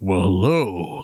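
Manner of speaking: luscious, rich baritone dropped very low. Describing a guy's voice, imitating a real deep, low voice. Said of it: "like real deep and".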